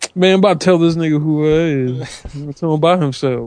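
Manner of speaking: put-on country voice.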